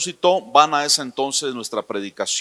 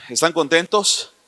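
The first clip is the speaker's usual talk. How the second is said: usual speaking voice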